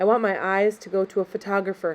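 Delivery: ordinary delivery, nothing marked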